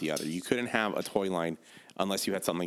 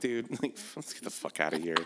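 laughing through the words, higher pitch; 3 semitones higher than usual. Retelling leaving a store after a cashier's remark: retelling own line while laughing. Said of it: "and I just start laughing".

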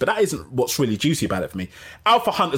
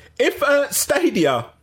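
higher-pitched, louder raised voice. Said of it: "I'll talk louder".

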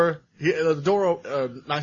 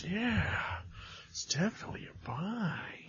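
laid-back put-on drawl, higher and quieter; 5 semitones higher, 16 dB quieter than usual. Rating an episode as a buy: Owen Wilson voice. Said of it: "our food reviewer just turned into Owen Wilson".

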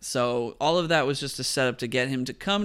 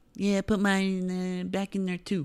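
higher voice with the word mine stretched out; 7 semitones higher than usual. Retelling a scene to another speaker: Dana Carvey impression. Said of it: "That was a very good impression".

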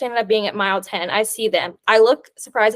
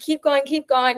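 re-enacted, acted-out yelling; 4 semitones higher than usual. Recounting a race, the speaker re-enacts urging on a runner coming back: retelling a yell. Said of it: "And I'm like yelling".

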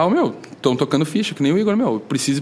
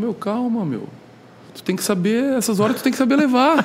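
mock relaxed, unbothered, calming, slightly high voice; 7 semitones higher than usual. Retelling how he answered after the speaker cursed at him, imitating a relaxed reply. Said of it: "E daí ele relaxado, assim".

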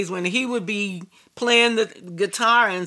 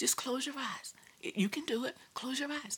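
whispered, much quieter; 4 semitones higher, 17 dB quieter than usual. Speaker recalls a voice urging them to close their eyes, retold whisper. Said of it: "because of the whispering".

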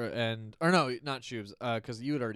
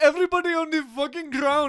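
put-on Middle Eastern accent; 9 dB louder than usual. At the mall, pantomiming a gun, speaker does a Middle Eastern voice. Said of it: "like a Middle Eastern voice".

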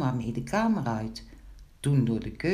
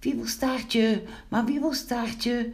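startled, frightened crying out; 9 semitones higher than usual. Threatened by a barking dog, the visitor cries out, frightened. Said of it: "riep Pinkeltje verschrikt".

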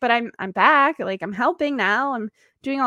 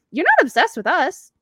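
cheerful, offhand, blasé, matter-of-fact, upbeat tone; 4 semitones higher, 4 dB louder than usual. Describing how Scott says it to them, imitating Scott's upbeat tone. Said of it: "He's saying it in such an upbeat way".

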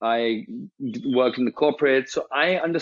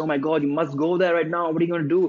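mock alarmed, frantic voice in full panic; 3 semitones higher than usual. Retelling a mother's reaction to a broken generator: imitating a panicking mother. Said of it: "she started panicking".

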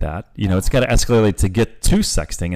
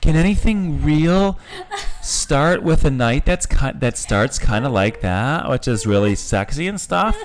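high, slow put-on typical female voice. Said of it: "trying to give the average female voice here".

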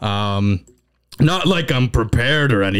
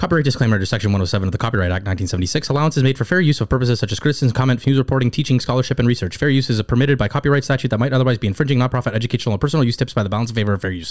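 fast-talking, rapid legal fine-print delivery. Reading a copyright disclaimer aloud for viewers, in a fast-talking fine-print voice. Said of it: "my best fast talking subtitle fine print voice".

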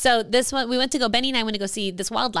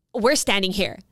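mimicked rude, nasty attitude. Speaker retells what a stranger who turned around said, imitating a nasty attitude. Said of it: "with the worst attitude".

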